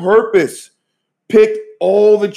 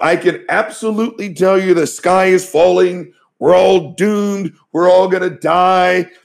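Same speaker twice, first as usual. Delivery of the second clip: heavy, mocking, sarcastic tone. Retelling what a man said when corona hit, imitating his sarcastic tone. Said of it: "sarcastic voice".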